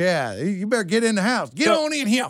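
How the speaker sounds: stern, authoritative, fatherly dad voice. Demonstrating the voice used to call the dog in: dad voice. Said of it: "I got dad voice. When I turn it on".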